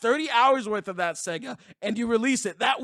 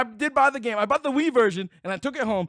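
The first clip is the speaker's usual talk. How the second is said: plain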